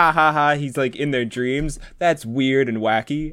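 amused chatter through giggling laughter. Describing a woman starting to watch A Nightmare on Elm Street, imitating someone laughing. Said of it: "she starts off like laughing".

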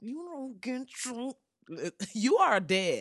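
words pushed out through gritted, clenched teeth. Describing a mama's threats, demonstrating talking through clenched teeth. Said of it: "talking through her teeth like this".

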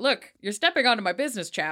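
newsman, news anchor voice. Voicing the character Henry warning a cousin: newsman voice. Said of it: "I turned him into a newsman".

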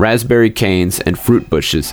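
ordinary delivery

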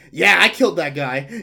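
mock gleeful excitement. Voicing a character gloating over the poisoning: mock super excited. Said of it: "Just like super excited".

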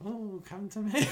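very high, slow, creepy put-on child-snatcher voice. Asked to do her child snatching voice, she calls out: child snatcher voice. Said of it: "Do your child snatching voice".

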